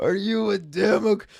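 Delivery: deep, deliberate, purposeful put-on caped-hero voice. Mimicking the line just heard on a clip: imitating a Batman voice. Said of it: "a Batman voice".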